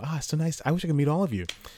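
polite nice-guy voice. Retelling shaking hands with the front row, voice up an octave. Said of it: "my voice goes up in an octave".

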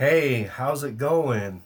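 slow, play-acted buddy-buddy, pally tone. Retelling how a man came in acting all buddy and pal: mock-chummy greeting. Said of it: "he came in being all, like, chummy and buddy and pal".

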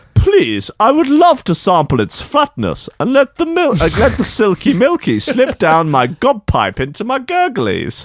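very high, lilting, swooping posh voice. Acting out a man's reply while telling a story, posh-sounding voice. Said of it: "He's quite posh sounding".

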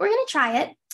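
high, fast, eager stage-mom chirp.

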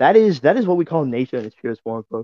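ordinary talk, nothing marked

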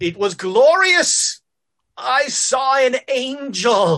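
slow, dazed, semi-conscious preacher voice, "angel" drawn out. Voicing a half-conscious preacher staring at nothing: voicing a semi-conscious preacher. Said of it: "you've got the preacher semi-conscious".

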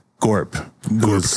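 plain

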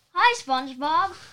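booming, very loud cartoon crab voice. A child, asked by Dad, tries an impression: Larry the Crab impression. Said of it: "Can I try to do an impression?".

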